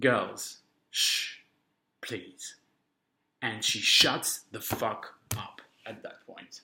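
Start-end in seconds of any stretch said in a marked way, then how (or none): 0.0-2.6 composed, unbothered, calm and gentle voice. Telling how the lady in front turned around at the movie, imitating a calm shush. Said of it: "she was really calm about it".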